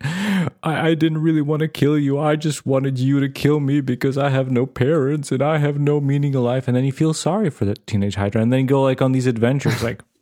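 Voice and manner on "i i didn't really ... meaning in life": mock weeping, tearful, crying through the words. Acting out an invented scene where the teenage Hydra speaks: crying. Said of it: "throws the knife and starts crying".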